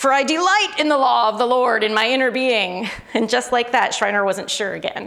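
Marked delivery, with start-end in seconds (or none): 0.0-2.9 earnest, heartfelt, passionate, fervent reading. Retelling how John Piper quoted a verse to Schreiner, imitating his passionate voice. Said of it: "quoted verse 22 with a really passionate voice".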